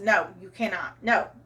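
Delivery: ordinary delivery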